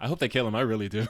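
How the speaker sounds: usual speaking voice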